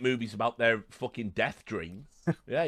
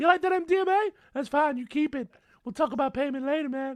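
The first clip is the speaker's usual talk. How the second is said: ridiculous voice pushed up very high; 14 semitones higher than usual. Retelling a character in a scene whose voice is an octave too high, Stewie voice. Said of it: "I'm sounding like Stewie from fucking Family Guy".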